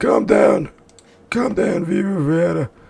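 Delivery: silly, high cartoon penguin voice. Reacting to a movie, the speaker quotes a line in a penguin voice. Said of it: "I got a good voice for a fucking penguin".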